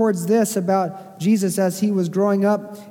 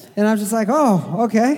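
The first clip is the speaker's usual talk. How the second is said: ordinary talk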